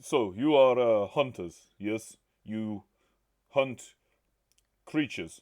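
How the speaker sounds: put-on Russian accent. Role-playing a character who questions the hunters, in a russian accent. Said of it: "you're Russian".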